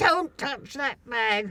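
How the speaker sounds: firm, high, commanding shout with authority. Retelling seeing their bag about to be handed to a man: retelling a commanding shout. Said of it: "in a very commanding voice".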